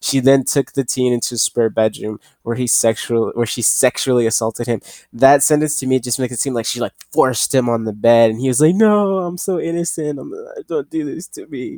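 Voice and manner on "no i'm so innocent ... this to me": fake crying, much higher, slower. Mocking a news sentence by acting out the teen's protest: mock crying. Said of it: "And he's just crying".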